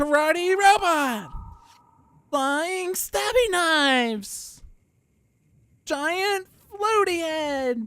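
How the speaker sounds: mock very high, thrilled, drawn-out yell. Shouting out card names as the hero Idealist: super excited Idealist shout. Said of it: "I have to shout out the concept as if, like, she's super excited".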